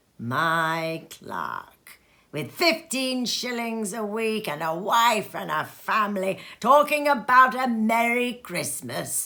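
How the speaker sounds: scornful, contemptuous, indignant scoff, "My" drawn out. A narrator reads Scrooge overhearing his clerk's greetings, Scrooge muttering indignantly. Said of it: "said [name] indignantly, / returned the uncle, / A Christmas Carol - Stave 1 Part 1 - read by [name] (uploaded 2020)".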